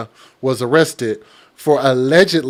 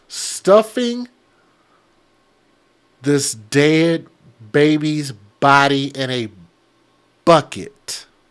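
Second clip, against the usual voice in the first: very slow and halting, word by word, heavy pauses. Host telling viewers about a criminal case, said very slowly. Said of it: "I gotta say that real slow".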